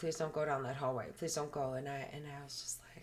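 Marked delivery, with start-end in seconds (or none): 0.0-1.7 put-on, earnest, imploring, pleading begging tone. Retelling what she said as the speaker went to check: imitating someone pleading. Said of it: "kind of pleaded with me and was like".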